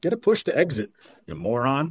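amused, chuckling, laughing-while-talking delivery. Retelling what a laundromat-owner buddy told him, imitating someone chuckling. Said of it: "just kind of chuckling".

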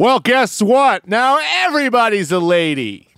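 full-on loud, high-pitched shouted outburst. Talking with another speaker about a show's new season, yelling. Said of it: "stop yelling".

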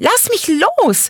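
very high, shrill, shrieking snap. Narrator voicing Judith snapping at her lover, shrieking and snapping. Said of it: "keifte Judith ihren Lover".

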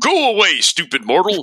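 high beast voice. Retelling a boss's taunt in a game: voicing Cerberus. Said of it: "he looks at us and he says".

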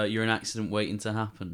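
normal talking voice

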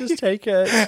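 high, upper-class voice.

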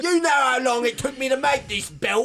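put-on angry Cockney accent. A player brings back Sizzbiv, a fun angry pseudo-British man, in mock-angry cockney. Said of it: "Very cockney and all that".

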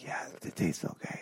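very soft, barely audible whisper. Imitating what their high dad whispered during a show: imitating dad's whisper. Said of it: "those six words were like whispers".

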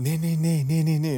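put-on quiet whisper. Retelling how a coworker spoke during a call: whispering, imitating someone. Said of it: "然后小小声讲".

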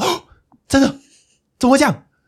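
very high, loud, engrossed exclamation. Speaker recounts getting drawn into a show's scene, retelling an engrossed reaction. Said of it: "我都在旁边情情不自禁".

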